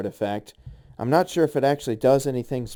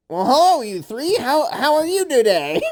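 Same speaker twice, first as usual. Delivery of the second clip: welcoming shopkeeper character voice, very high, loud; 13 semitones higher, 5 dB louder than usual. A game master voices the man at the counter greeting the three players, shopkeeper character voice. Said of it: "comes up with a character voice and is like".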